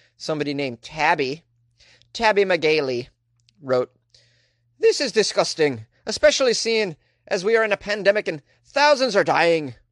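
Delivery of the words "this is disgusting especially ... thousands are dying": put-on Irish accent, pitched a bit high. Reading out a parent's online comment: Irish accent. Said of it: "Tabby a Irish accent".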